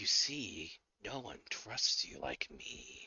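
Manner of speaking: very quiet, hushed voice of something evil. Voicing a voice from flaming lips on a character's ear: evil entity voice. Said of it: "you hear a voice emanate from Donson".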